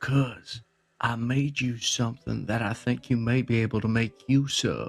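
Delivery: hushed whisper. Pulling the kid aside to hand over something made for them, whispering. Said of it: "why are we whispering?".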